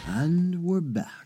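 seductive showman delivery. Podcast host welcoming listeners back from the break, sexy announcer voice. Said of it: "That's my sexy announcer voice".

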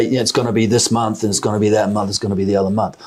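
ordinary talk, nothing marked

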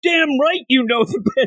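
put-on very high, shrieking, screaming yell. Retelling a scene where a character turns on another: imitating a character screaming. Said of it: "He starts screaming at him".

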